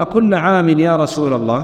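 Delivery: ordinary delivery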